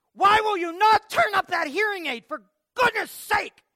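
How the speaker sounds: shrill, very high-pitched, very loud yell. Telling about a woman in a store yelling at her mother, retelling a really loud yell. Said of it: "she just yelled like it really loud".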